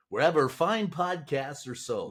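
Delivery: smooth FM radio DJ announcer delivery. Podcast host plugging the show while thanking a guest, in fm radio dj voice. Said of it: "that's my great F M radio D J voice".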